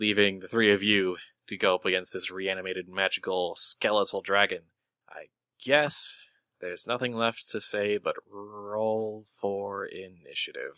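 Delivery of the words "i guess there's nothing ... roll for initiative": unhurried, slow, deliberate, with "roll" drawn out. Game master announcing the fight against a skeletal dragon, said slowly. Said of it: "Did you say that slowly".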